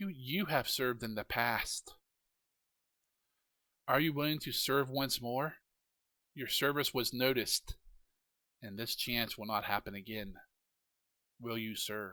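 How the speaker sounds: very hushed, soft, alluring, seductive feminine voice. Narrator voicing the voice that speaks in the listener's head, soft seductive feminine voice. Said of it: "It's very su- seductive voice".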